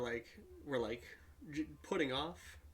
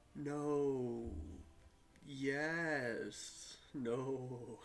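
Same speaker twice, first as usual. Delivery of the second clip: scornful, mocking, sarcastic, drawn-out yes. Reacting to another player's answer about the order: sarcastic tone. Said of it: "Sound so fucking sarcastic".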